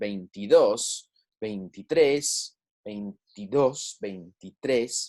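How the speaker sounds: last syllable stressed, a bit slow. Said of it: "our stress wants to be on that last syllable".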